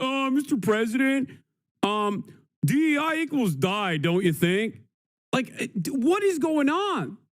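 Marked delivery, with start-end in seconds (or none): 0.0-4.8 scornful caricature of a fawning voice. Mocking a podcaster asking the president a question: mocking a podcaster's question. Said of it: "a bunch of right-wing podcast dudes being like".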